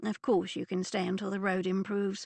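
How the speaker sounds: plain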